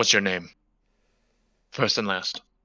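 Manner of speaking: hushed, quiet, low-voiced undertone. Questioning a suspect while patting them down: hushed tone. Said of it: "in a hushed tone".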